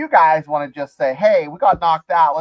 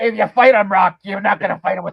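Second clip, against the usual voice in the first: put-on gruff trainer voice, higher; 4 semitones higher than usual. Quoting Mickey from Rocky while talking about the movie: Mickey voice from Rocky. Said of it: "You do that voice so well".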